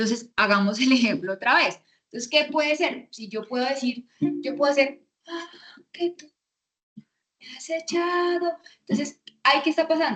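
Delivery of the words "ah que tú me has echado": very airy, breathy, high, slow voice without resonance. A speaker explaining vocal resonance demonstrates a phrase in a very airy breathy voice. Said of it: "estoy haciendo la voz muy airada".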